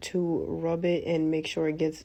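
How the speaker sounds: ordinary delivery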